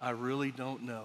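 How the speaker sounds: very quiet, hushed, low voice. Retelling a Presbyterian elder's reply to the speaker's question, retelling a very quiet reply. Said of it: "said in the quietest voice and looked down".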